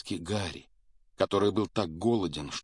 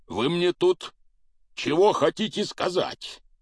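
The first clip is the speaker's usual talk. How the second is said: loud, enraged giant's snarling growl, very high pitch; 9 semitones higher, 5 dB louder than usual. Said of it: "прорычал он".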